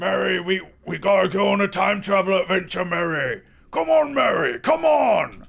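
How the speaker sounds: very loud hollering at full volume. Showing viewers a Rick voice as the uncle in a skit: Rick impression. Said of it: "that's my Rick and Morty impression".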